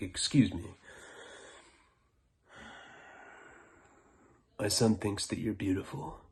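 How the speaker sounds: stoned-sounding voice. Retelling the dad's words to a waitress, imitating a stoned man. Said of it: "stoned and incapacitated at this point".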